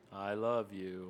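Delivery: dead-flat monotone with zero inflection. Showing how a loving line sounds flat: Ben Stein monotone voice. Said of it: "they're coming out there like Ben Stein".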